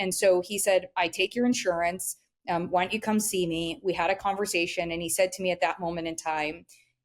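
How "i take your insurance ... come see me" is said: plain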